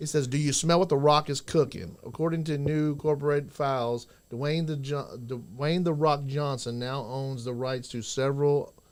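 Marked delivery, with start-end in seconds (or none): none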